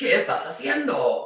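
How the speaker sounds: Spanish with Japanese accent. Saying a spanish phrase on a live stream: japanese accent in spanish. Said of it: "That sounded like a Japanese accent with Spanish".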